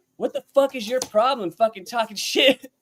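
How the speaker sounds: irate, heated but contained, high angry woman's voice. Retelling a bar story where a man's wife confronts Austin: imitating a woman yelling angrily. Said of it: "she's just talking hella shit to him".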